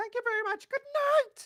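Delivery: very shrieky, high, loud voice. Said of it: "As [name] would say ... In a very shrieky voice".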